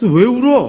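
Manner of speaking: mocking, scornful, high-pitched.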